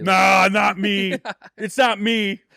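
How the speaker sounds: high, slow, drawn-out denying tone. Retelling a caller's denial after being caught: imitating Higgins. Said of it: "And he's like".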